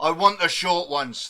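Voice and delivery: shouting at top of voice. Playing a character who attacks in a forge: shouting at the top of voice. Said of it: "I'm gonna shout at the top of my voice".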